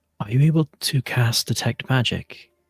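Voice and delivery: secretive, voiced stage half-whisper. Voicing Alaric sending a secret magic message to Orion: half-whispering. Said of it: "he just kind of whispers".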